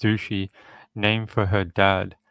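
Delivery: ordinary talk, nothing marked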